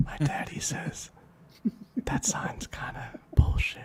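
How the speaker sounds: put-on joking whisper. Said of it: "Yes, whisper close".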